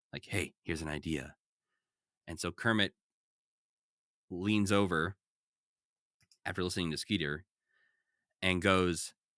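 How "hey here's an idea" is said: low, hushed stage whisper, half-voiced. Retelling a story where one character half-whispers an idea to another, retelling a half-whisper. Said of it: "and whispers to Kermit".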